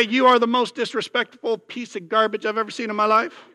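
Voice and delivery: heated rant with Southern accent slipping out. Speaker voicing what a parent tells their child, angry Southern-sounding accent. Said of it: "I sound like I'm from the South".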